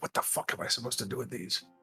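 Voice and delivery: very quiet, whispered muttering mumble. Voicing a dwarf as the visitor walks away: mumbling to himself. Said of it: "he starts, like, mumbling".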